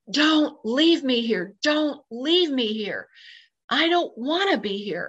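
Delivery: put-on urgent, desperate, begging outcry. Recounting a past experience, the speaker retells screaming out. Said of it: "I screamed out".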